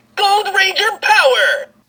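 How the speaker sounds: high-pitched, geeky, nerdy superhero voice. A Gold Ranger toy key sounds its call, high-pitched nerdy hero voice. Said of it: "too high-pitched and just like nerdy hero".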